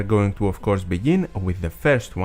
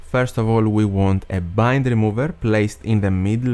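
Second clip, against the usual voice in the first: normal talking voice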